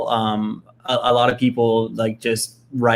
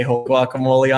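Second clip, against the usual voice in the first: ordinary talk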